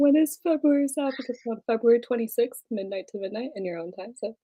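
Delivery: airline cabin announcement style. The speaker switches modes mid-conversation, in a flight attendant announcement voice. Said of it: "sounded like you were a flight attendant".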